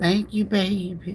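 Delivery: high lady voice. Retelling how a lady at the park asked about his seat: imitating Mama. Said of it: "I do her like this here".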